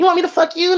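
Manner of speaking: very high, squeezed-up voice. Retelling a woman's account, doing Aziz Ansari's high-pitched voice. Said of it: "he's got that high pitch".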